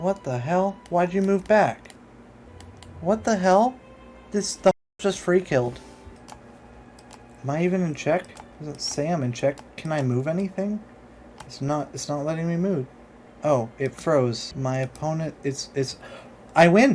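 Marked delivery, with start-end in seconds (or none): 0.0-12.9 confused, higher and faster. Player whose enemy ai has frozen mid-game, confused. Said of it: "*visible confusion*".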